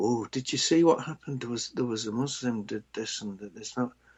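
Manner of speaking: secretive, low, hushed, gossiping stage whisper. Imitating people in a noisy bar, retelling a half-whisper. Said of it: "they whisper".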